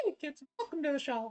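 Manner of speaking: going way up high and quick. See if you can still do it after a few years, in a Mickey Mouse voice. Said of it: "a bit of Mickey".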